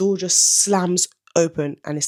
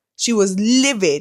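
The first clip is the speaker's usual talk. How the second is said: sudden, loud shouted outburst; 3 semitones higher, 4 dB louder than usual. Retelling how a relative reacted to news of a house: loud outburst. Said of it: "Sorry for headphone wearers there".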